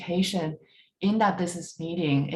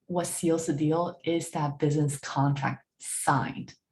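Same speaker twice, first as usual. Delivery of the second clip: slow delivery leaning on "signed". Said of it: "I emphasize the word signed".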